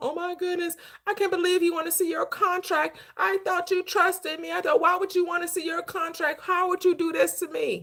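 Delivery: weepy, tearful, crying, wounded tone. Retelling how a manager reacted to a contract request: imitating someone crying. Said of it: "started crying".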